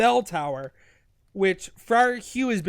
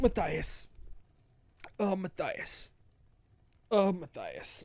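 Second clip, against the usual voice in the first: put-on slow, drawn-out dying voice; 3 semitones lower, 9 dB quieter than usual. Retelling a story where Abbot Mortimer lies dying: imitating Abbot Mortimer dying. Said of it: "laying there and he's dying".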